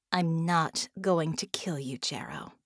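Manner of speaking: dry, affectless, toneless delivery. Narrator reading a woman speaking to a defeated man, flat voice. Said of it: "her voice flat".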